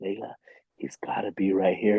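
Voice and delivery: put-on whisper. Retelling creeping up on an animal with a partner: retelling a whisper. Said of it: "I'm doing the whole whisper".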